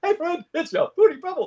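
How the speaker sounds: very high-pitched cartoon sidekick voice. Retelling how a large actor voiced a small character: Barney Rubble voice.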